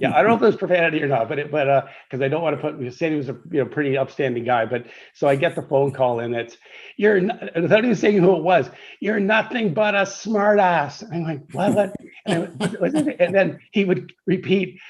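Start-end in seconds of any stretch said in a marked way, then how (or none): 9.0-11.0 high-pitched, play-acted screaming at top of lungs. Retelling a phone call from Sandy Baird, imitating Sandy Baird screaming. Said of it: "screaming at me at the top of".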